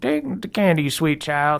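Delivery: put-on creaky old lady voice. Voicing a grandmother handing a grandchild candy: creaky old lady voice. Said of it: "she's, like, a creaky old lady".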